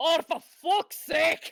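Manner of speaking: loud, angry Scottish accent, blurted high. Reacting to a dice roll with anger: angry Scottish accent. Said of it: "I was so angry I went Scottish for a second".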